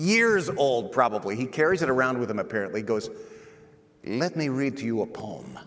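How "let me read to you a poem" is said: put-on Swiss-Italian accent. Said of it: "That's exactly what this gentleman sounded like".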